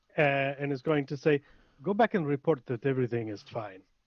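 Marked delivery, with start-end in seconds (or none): 1.9-3.8 put-on Spanish-accented character voice. A player's character casts suggestion on someone, in a Spanish accent. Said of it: "Robes is Spanish".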